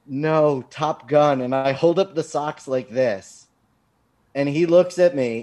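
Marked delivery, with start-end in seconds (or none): 0.1-1.4 mock stunned, thunderstruck, completely shocked voice. Retelling their own reply to a man's remark, in a put-on shocked reply. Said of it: "in complete shock".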